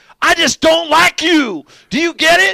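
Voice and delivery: imitated hard Southern drawl. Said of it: "hardest Southern draw".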